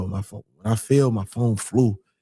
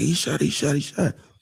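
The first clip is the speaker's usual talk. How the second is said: mock panicked outburst, higher pitch; 5 semitones higher than usual. Retelling how a waitress reacted after a shooting: imitating someone freaking out. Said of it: "she started freaking out".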